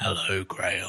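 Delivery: very low, deep character voice. Answering a request to do his voice: Tim Shaw voice. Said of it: "how do you do his voice?".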